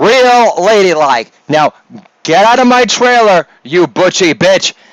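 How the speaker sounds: berating, blasting tirade, holding nothing back. Doing an impression of Jeffrey Tambor blasting a co-star: Jeffrey Tambor impression blasting co-star. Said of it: "It's my impersonation of Jeffrey Tambor blasting".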